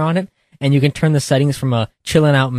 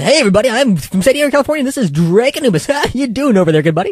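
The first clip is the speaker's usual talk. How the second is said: on-air DJ patter, radio announcer voice, pitched up; 10 semitones higher, 3 dB louder than usual. Told their radio voice is interesting, the speaker introduces himself in radio announcer voice. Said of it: "I can do the radio voice".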